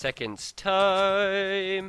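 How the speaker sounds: high, slow, stretched, drawn-out singsong note. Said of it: "I'm not going up any more octaves".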